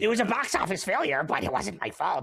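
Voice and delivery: prideful, proud studio executive voice. Imitating a film executive answering Kevin Feige: Amy Pascal voice. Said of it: "That's my Amy Pascal voice forever".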